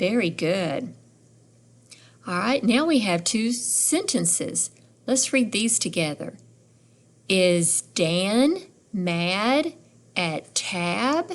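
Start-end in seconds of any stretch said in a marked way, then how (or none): 7.3-11.3 rising pitch on Tab. Reading a question sentence aloud together, rising pitch on Tab. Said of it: "did you hear my voice go up at the end?".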